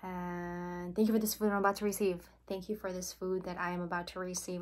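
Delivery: very fast rattled delivery. Showing how a prayer before eating is said, super fast. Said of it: "And I say it super, super fast".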